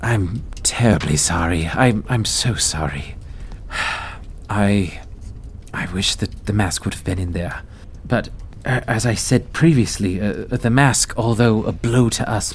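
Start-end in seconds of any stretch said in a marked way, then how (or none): 0.0-7.6 remorseful character voice, lower. Game master voicing a character apologizing to those in the room, Leosin, remorseful. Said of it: "looks to those in the room remorsefully and goes".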